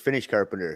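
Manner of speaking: plain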